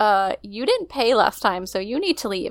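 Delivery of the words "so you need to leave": ordinary talk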